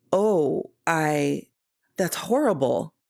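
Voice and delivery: taken aback, shocked and stunned. Hearing a colleague's upsetting news, [name] reacts, shocked.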